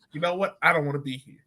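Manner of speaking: normal talking voice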